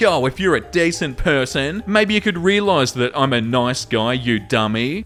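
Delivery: ordinary delivery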